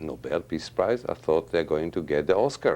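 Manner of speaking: ordinary delivery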